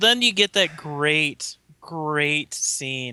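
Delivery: ironic, sarcastic delivery. Praising a movie scene that the speaker disliked: sarcastic. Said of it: "I am being sarcastic here".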